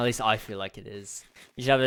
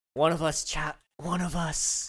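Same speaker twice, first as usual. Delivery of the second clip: put-on near-whisper impression, pitched much higher; 6 semitones higher than usual. Asked to do a Kit accent, the speaker tries it: almost-whispered Kit impression. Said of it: "she almost whispers".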